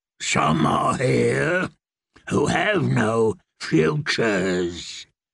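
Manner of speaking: terrible deep muttering, very slow. A fortune-teller answers girls begging for their futures, muttering in a terrible deep voice. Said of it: "Maggie muttered in her terrible deep voice".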